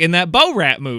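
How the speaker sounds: Southern wrestler-style voice, word split into two parts. Mimicking how another speaker said a movie title: imitating southern wrestler-like "bo rat". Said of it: "but first you were like".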